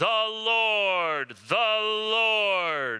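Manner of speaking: loud, stern, regal voice, "Lord" drawn out. Wondering how the lord's name was first said, trying a stern royal declaration. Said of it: "royal sort of declaration".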